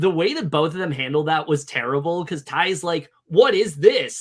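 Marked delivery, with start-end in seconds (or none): 3.3-4.2 very loud, high, blurted delivery. Retelling a scene where Ty is given a letter: imitating Ty saying it loudly. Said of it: "he said it very loudly".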